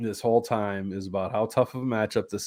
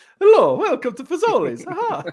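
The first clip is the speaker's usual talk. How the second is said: loud, high, sing-song Italian accent; 8 dB louder than usual. Joking that Mario and Luigi are running the drive-through, greet a customer in a Mario and Luigi voice. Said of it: "Mario and Luigi running the drive-through there".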